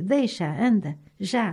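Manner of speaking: ordinary delivery, nothing marked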